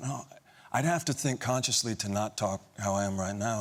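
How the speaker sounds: ordinary delivery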